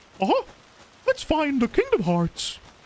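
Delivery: very high, squeaky sing-song voice. Doing a best attempt at a cartoon mouse: Mickey Mouse voice. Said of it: "It's my best Mickey Mouse impression".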